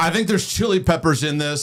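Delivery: put-on, blaring, loud, very high-pitched talk. Retelling what a friend said in a theater, imitating Max talking really loud. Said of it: "he's talking really loud".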